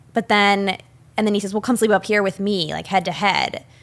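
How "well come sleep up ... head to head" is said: ordinary talk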